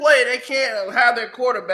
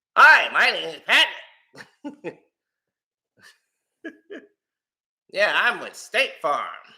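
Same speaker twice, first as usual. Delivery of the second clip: slow, odd, mismatched weird voice. Mocking how a man talks when introducing himself, use a weird voice that doesn't fit him. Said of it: "he got that weird voice that don't fit his".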